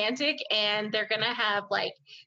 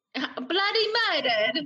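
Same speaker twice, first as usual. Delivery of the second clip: clumsy, bad put-on British accent, pitched up; 6 semitones higher than usual. Joking about how a movie will end, in a bad put-on British accent. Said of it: "don't do that".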